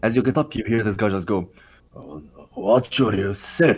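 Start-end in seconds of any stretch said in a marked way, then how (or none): 2.0-3.8 put-on slurred-sounding drunk voice. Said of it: "he's drunk".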